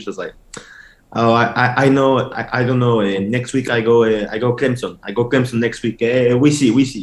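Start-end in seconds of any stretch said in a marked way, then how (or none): 1.1-7.0 put-on, fake Mexican accent. Retelling answering the recruits in character, imitating own put-on mexican accent. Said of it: "all this with my accent, of course".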